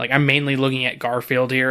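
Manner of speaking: plain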